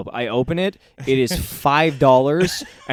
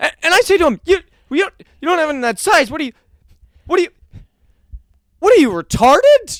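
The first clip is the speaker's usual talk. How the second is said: high, flustered, stumbling, stammering, panicked delivery; 7 dB louder than usual. Retelling a man who bombs and panics while riffing, imitating panicked stammering. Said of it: "starts to panic, so tries riffing".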